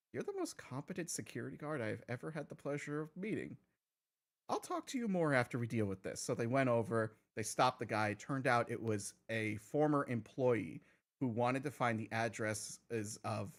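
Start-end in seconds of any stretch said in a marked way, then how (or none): 0.1-6.2 secretive, soft, hushed half-whisper. Retelling what one of them said while walking away: imitating a half-whisper. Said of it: "turned around and whispered".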